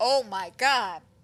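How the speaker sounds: put-on pure, utter panic. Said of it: "pure, utter panic".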